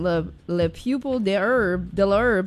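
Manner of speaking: thick Texas accent, very slow. Mentioning a french group, the speaker says its french name in a thick texas accent. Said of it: "I'm going to say it in my most Texas accent".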